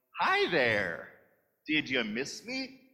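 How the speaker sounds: breezy, bright, cheery tone with swooping pitch. Imagining how Jesus would greet someone: mock-cheery Jesus voice. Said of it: "I don't think it would be too cheery, like".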